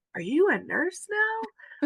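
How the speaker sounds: acted stunned disbelief, very high and stretched out. Retelling seeing a sister appear as a rescuer: imitating own shock. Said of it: "I'm just shocked 'cause I'm like".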